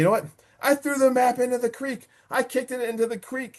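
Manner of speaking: mock very high, crazed, manic laughing frenzy. Retelling a man acting like a lunatic: mimicking a laughing mad rage. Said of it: "In like a mad rage, he's like laughing".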